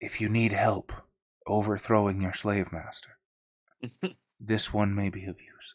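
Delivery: low, croaking, artificial synthesized robotic voice. Retelling what he says when he leans in, in a croaking artificial vocalizer voice. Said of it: "He sort of croaks in this artificial uh, vocabulator voice".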